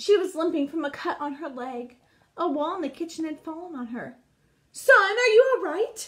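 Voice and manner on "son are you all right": very loud, high crying out. A mother running toward her son, crying out. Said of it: "She cried".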